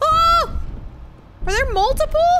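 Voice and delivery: shrill, frightened, very loud, high panicked cry. Gamer calling for help during play, panicking under pressure. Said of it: "I'm panicking under pressure".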